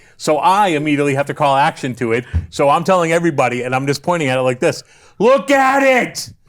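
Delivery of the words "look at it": high, loud drawn-out yell. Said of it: "I'm just yelling to everybody".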